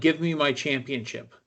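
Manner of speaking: usual speaking voice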